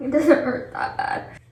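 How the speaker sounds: crying through words. Told it's okay to cry and that you did well, speaking while crying. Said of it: "I don't even know why I'm crying".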